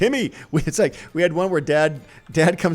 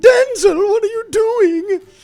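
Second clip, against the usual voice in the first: put-on pitch way up, loud old lady voice; 7 dB louder than usual. Thanking a voice actor for borrowing his character, then doing Crocker's mother voice. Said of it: "He also did the voice of Crocker's mother's".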